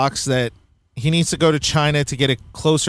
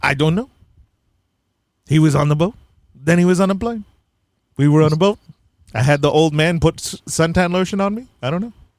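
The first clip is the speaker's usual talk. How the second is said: put-on, Soviet-style Russian accent. Acting out an imagined answer to a question, in a put-on Russian accent. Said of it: "my Russian accent".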